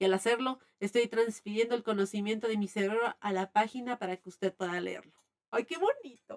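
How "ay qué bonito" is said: touched, emotional outburst in a high voice. Reacting to a passage while reading it aloud: moved, emotional. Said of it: "Perdón, me emociono".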